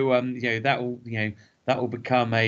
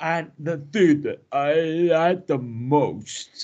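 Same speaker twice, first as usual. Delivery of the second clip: suppressed yawn, higher pitch; 4 semitones higher than usual. Showing how a stifled yawn might sound mid-sentence: stifling a yawn. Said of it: "because I'm trying to stifle a yawn".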